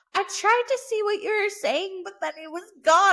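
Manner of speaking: put-on high little old lady voice. Retelling what a friend's mom said later: imitating an old lady. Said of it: "you sound like an old lady".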